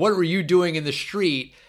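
high-pitched yelling in disbelief. Retelling a film scene where the driver yells at them: imitating someone yelling. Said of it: "He's yelling at them".

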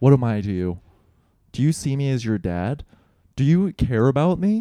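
furious, angry scolding with rising pitch. Retelling a phone call from dad: imitating an angry dad scolding. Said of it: "my dad chewed me the fuck out".

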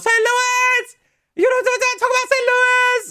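very high, crazed screaming yell. Retelling a live show where Tony Khan came out: imitating Tony Khan yelling. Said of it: "This dude comes out yelling and screaming".

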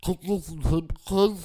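mimicked thick-tongued speech. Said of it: "they couldn't say it 'cause their tongue was swollen".

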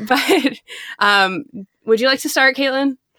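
nervous, anxious, slightly high voice. Asking another speaker to start the discussion, nervous. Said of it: "i'm very nervous to talk about this".

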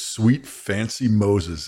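slow, drawn-out exclamation of utter disgust.

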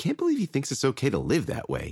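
under-the-breath grumble. Berenice, glaring at a house across the street beside Robert, muttered. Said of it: "she muttered".

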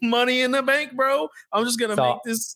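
very high-pitched tech-bro voice. Imitating tech bros moving into crypto: imitating tech bros. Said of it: "the tech bros are in and they're like".

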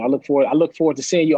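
ordinary talk

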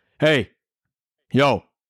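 firm, stern, strict father voice. Retelling how J Flow corrected a kid: imitating J Flow's deeper stern dad voice. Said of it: "his voice got deeper".

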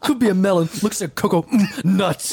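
wild, unhinged, losing-it delivery. Describing a blurry video clip as a joke: Dane Cook impression. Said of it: "I'm doing a Dane Cook impression".

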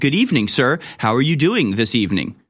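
awkward, disconnected, robotic telemarketer voice. Showing how a telemarketer sounds when calling someone: robotic telemarketer voice. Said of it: "Just very robotic, inhuman, disconnected, and awkward".

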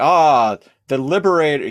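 put-on excited voice. Retelling a show scene where Nereus greets Teal'c: imitating Nereus, so excited. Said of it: "He's, like, so excited".

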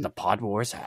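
alien sage voice with flipped word order. Joking about a podcast rivalry, slipping into a Yoda voice. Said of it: "incredible impression of Yoda".

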